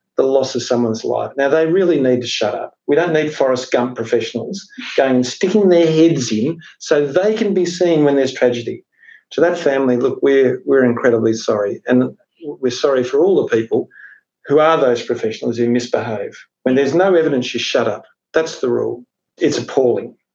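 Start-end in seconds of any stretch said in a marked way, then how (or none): none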